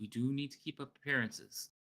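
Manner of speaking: hushed, confidential half-whisper, like a stage whisper. A game master voices a wagon seller half-whispering to customers. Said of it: "And he'll kind of whisper".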